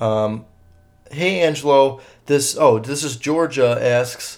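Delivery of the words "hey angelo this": ordinary talk, nothing marked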